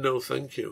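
plain

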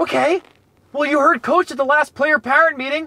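very high, nerdy dad character voice. Playing a dad character, in a nerdy dad voice. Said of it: "When I'm doing this dad character, I'm kind of nerdy".

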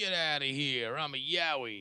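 put-on gruff yowie creature voice. Doing a stand-up style bit as a Yowie: put-on gruff Yowie voice. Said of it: "Yowies walk like this".

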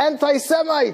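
mock, furious, high, angry screamed outburst. Retelling a man screaming at a train conductor: retelling an angry scream. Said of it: "says in an angry gesture and screams out".

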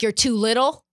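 ordinary talk

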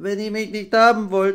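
very high, loud, halting stammer with stumbled-out words. Narrator reads Nepomuk at the end of his report, stammering. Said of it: "stammelte er".

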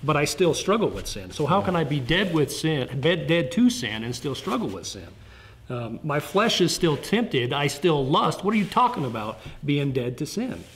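ordinary delivery

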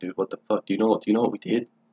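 quiet, nervous, scared muttering. Retelling muttering to a friend while a cop approached: imitating own muttering. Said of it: "I'm trying to, like, mutter to him".

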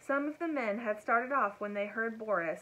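ordinary delivery, nothing marked

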